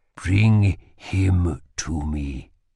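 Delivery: whispering. Holland whispered as Lila squeezed her eyes shut. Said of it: "whispered Holland".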